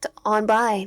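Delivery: ordinary delivery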